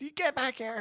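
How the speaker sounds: very high, acted-out screaming yell. Imagining a parent calling a teen home: imitating mom screaming from the porch. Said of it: "She'd probably be screaming from the porch".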